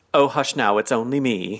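put-on caring, cheeky motherly voice. Retelling a TV scene's line, imitating Mister Humphries, caring and cheeky. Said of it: "it sounds something like a mom would say to a little kid".

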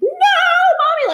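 mock very high, loud terrified child wail, mommy stretched. Class instructor describing a child at drop-off, imitating a screaming terrified child. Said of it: "the kid will just be like screaming".

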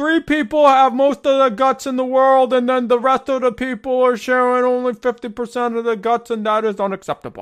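loud high haranguing delivery. Joking about gutless Americans, doing a Bernie Sanders impression. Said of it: "I'm gonna do the Bernie".

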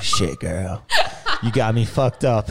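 fake American accent, drawn out and swooping. Retelling own past words to a friend: put-on american accent. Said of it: "I'll put on, like, American accent sometimes".

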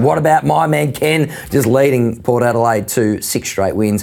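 ordinary delivery

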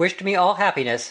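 plain reading voice

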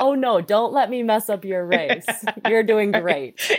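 put-on, laid-on Midwestern accent. Speaker mocks their own remark as very Midwestern, in a put-on Midwestern voice. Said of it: "It is so Midwestern. It's like".

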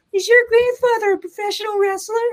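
put-on very high-pitched voice of a nine-year-old. Recalling a 9-year-old asking a question, in little Randy's high-pitched voice. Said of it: "Little 9-year-old Randy's high pitched voice".

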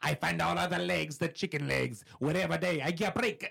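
high, menacing mock Italian-accented leprechaun voice.

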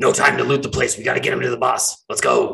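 low, rough, deep, scratchy creature voice. One of the bird people, hidden behind barrels, bristles and speaks in a deeper scratchy voice. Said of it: "the next voice out of his mouth is a deeper sort of like scratchy voice".

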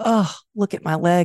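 acted disgusted voice. Speaker recounts looking at a swollen leg, retelling a disgusted remark. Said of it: "looked at my leg kind of with disgust".

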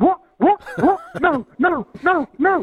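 high, clucking chicken voice with repeats. Retelling seeing a late score on the phone: chicken voice. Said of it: "You sound like a chicken now".

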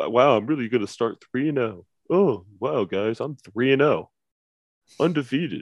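self-congratulating, crowing, showy bragging tone. Mocking a friend's repeated boasts in the group chat: imitating Jerry bragging. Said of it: "He keeps saying that in the group chat".

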